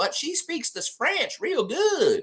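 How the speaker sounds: put-on strong Southern accent, very high. Imitating the old French teacher from Tallahassee: strong Southern accent. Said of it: "She talks like this".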